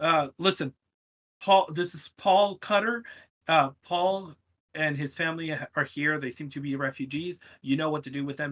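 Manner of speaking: ordinary talk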